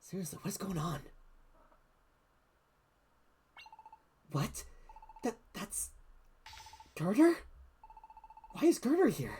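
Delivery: soft, hushed whisper. Hiding with Serpia after being told to whisper, whispering. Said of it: "I'll whisper".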